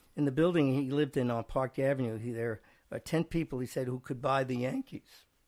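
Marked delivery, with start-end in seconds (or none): none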